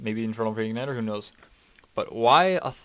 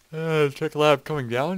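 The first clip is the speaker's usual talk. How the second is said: big yawn through a word, higher and slower; 5 semitones higher, 3 dB louder than usual. Commentating a game, with a big yawn in the middle of a word. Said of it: "Big yawn right in the middle of a word there".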